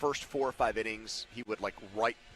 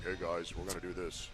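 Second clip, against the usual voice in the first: low, flat monotone delivery; 4 semitones lower, 5 dB quieter than usual. Asking whether Russ talked to the guys like this: Russ monotone impression. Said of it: "in that monotone".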